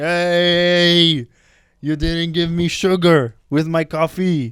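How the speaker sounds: very slow, dragged-out angry shout, 'hey' drawn out. Retelling a man who came into the shop yelling, imitating his yell. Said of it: "He's yelling like".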